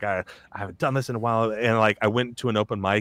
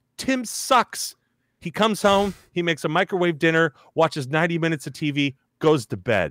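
irritated, fed-up ghost voice, pitched up; 7 semitones higher than usual. Telling a bit where a ghost complains about his house's new tenant: annoyed ghost voice. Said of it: "I've got like the ghost".

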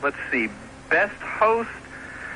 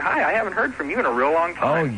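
ordinary talk, nothing marked

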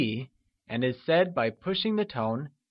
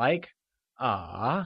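falling-rising third tone on ah; 3 semitones lower than usual. Showing a learner the mandarin third tone: falling-rising third tone. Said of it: "pushing the tone and then letting go".

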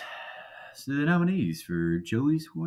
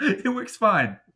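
high, loud, laughing bro voice impression. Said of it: "He's like".

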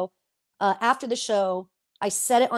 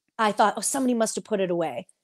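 normal talking voice

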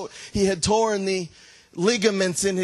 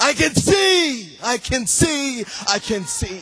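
mock yelling, louder, with higher pitch; 4 semitones higher, 3 dB louder than usual. Retelling a healed visitor at the altar: imitating someone yelling louder. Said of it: "she started yelling louder".

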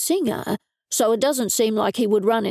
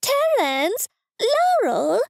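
shrill, very high, swooping shriek; 12 semitones higher than usual. The narrator's mother calls Terence and Laurel from the front door, shrieking. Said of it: "My mother shrieked from the front door".

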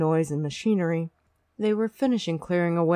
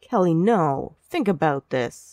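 protesting tone, much slower pace. Narrator reading a male character's reply in a story, protesting. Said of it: "he protested".

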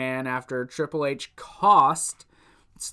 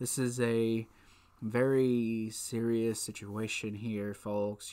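mock grave, somber announcer voice, low and slow; 5 semitones lower, 9 dB quieter than usual. Retelling how two men checked on her staged injury, mock-somber announcer voice. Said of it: "They have the somber voice".

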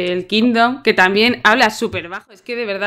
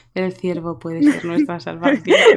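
dull, lifeless delivery, dropped low and dead; 4 semitones lower, 3 dB quieter than usual. Repeating a line just heard to mock it: very monotone voice. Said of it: "con una voz monótona que te cagas".

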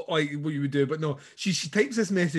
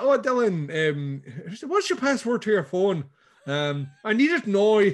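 badly done put-on Northern Irish accent; 3 semitones higher than usual. Retelling what a character says to Dylan: bad Northern Irish accent. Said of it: "That's my bad Northern Irish".

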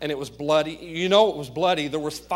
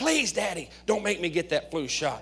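put-on pleading whisper, loud as hollering; 2 semitones higher, 4 dB quieter than usual. A father retells his son Jack begging about a flu shot, imitating Jack's loud pleading whisper. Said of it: "Jack's please whispering was as loud as many people hollering".

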